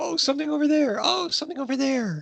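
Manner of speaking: mock high, scatterbrained, hyper, distracted squirrel voice. Mocking own short attention span: acting like a bad squirrel on meth. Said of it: "I'm like a bad, bad squirrel on meth. I just like".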